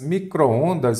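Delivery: micro-ondas said again, still slow. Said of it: "o que que você observa aqui".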